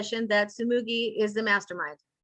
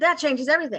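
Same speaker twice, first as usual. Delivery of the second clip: ordinary talk, nothing marked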